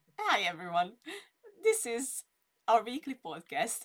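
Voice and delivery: high, loud speech broken up by laughter. Starting the weekly podcast intro, the host is laughing while speaking. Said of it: "I can't stop laughing at Erica's smile".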